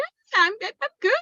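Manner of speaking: high-pitched, put-on fine, fake-cheery voice. A mother retelling answering her small kids from the car, in a put-on high-pitched lying voice. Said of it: "that high pitched".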